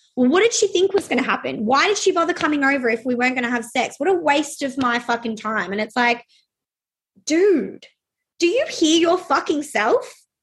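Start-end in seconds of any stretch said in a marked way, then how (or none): 0.1-5.7 mock entitled, aggrieved, complaining tone. Retelling a comment heard from men many times: imitating men complaining. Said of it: "you hear men all the time".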